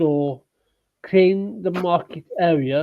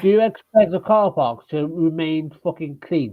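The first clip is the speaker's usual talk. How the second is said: plain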